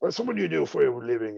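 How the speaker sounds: brutal Nordic tone of voice. Retelling how someone greeted a confused fan: brutal Nordic tone of voice. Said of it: "in his very brutal, uh, Nor-, Nor-, Nordic tone of voice".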